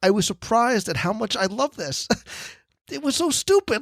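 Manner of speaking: emotional, choked-up voice lifted high. Describing a Christmas event with Mrs. Claus, choked up. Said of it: "I don't know why I'm getting choked up".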